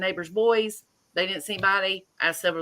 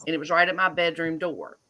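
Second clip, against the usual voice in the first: ordinary talk, nothing marked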